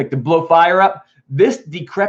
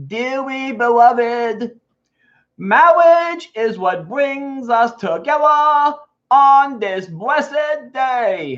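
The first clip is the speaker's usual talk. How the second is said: high, slow, drawn-out cartoon voice; 8 semitones higher than usual. Reading the wedding scene, voicing Elmer Fudd leading it: Elmer Fudd voice. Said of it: "Elmer Fudd M C'ing the wedding".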